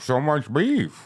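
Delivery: silly cartoon crab-like alien creature character voice. Asked by another speaker to do Zoidberg, the speaker tries it: Zoidberg voice. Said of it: "Can you do the voice of Zoidberg?".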